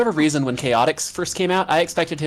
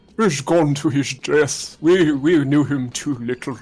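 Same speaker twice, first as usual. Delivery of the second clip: put-on elderly gentleman's voice. Talking about a favorite line, doing an old man voice. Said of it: "one of my favorite old man voices".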